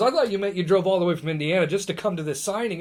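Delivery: normal talking voice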